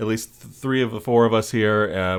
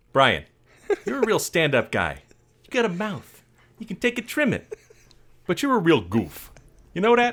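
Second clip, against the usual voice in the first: lively, swooping put-on Chicago accent; 8 semitones higher than usual. A co-host addresses Brian on their show, in a Chicago accent. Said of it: "How's my Chicago accent?".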